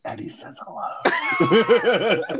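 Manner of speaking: hushed, close, secretive whisper. Acting out Mari whispering in the other speaker's ear: imitating Mari whispering. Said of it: "whisper in your ear, and she's like".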